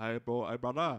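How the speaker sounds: attempted Hawaiian accent. Wondering aloud how Hawaiian accents go, then trying one: attempted Hawaiian accent. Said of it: "How do you do Hawaiian accents?".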